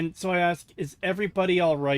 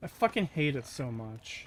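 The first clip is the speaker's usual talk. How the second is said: ordinary talk, nothing marked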